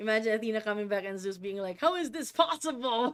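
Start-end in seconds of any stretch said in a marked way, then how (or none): 1.8-3.1 high-pitched anime-rival character voice. Imagining Zeus reacting to Athena coming back, Vegeta voice as Zeus. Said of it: "I'm imagining him saying that in a Vegeta voice".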